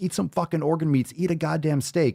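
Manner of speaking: high-pitched, loud, attention-grabbing yell. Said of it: "when I'm yelling".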